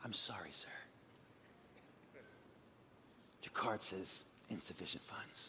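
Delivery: very quiet, polite whisper. Imitating a cashier who leans in at the register: imitating a quiet, polite cashier. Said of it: "very politely and quietly".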